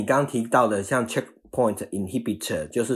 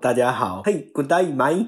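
thick, heavy, strong Australian accent; 4 semitones higher than usual. After the guest is introduced, the speaker greets everyone in a thick Australian accent. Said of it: "用澳洲腔的英文跟大家打招呼".

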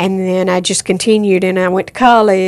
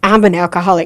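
plain

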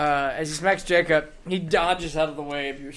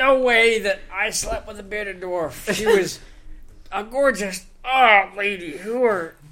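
put-on, super drunk, sloshed, groggy character voice; 4 semitones higher, 3 dB louder than usual. Game master voices a passed-out, super drunk human as he comes to; super drunk. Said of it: "He is absolutely passed out. You see around him as you get closer, there are bottles of alcohol strewn everywhere. He is not sleeping as much as he is completely passed out. / He's a human with deep r".

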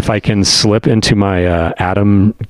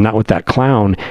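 usual speaking voice

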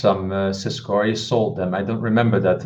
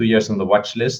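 ordinary delivery

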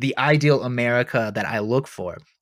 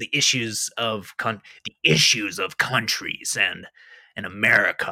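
slow, measured, drawn-out narrator voice. Giving a shout out to a history podcaster: Dan Carlin impression. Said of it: "That's a great impression".

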